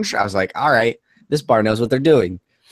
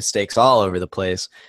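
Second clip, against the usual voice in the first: plain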